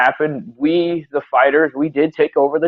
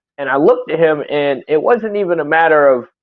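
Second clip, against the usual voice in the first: ordinary talk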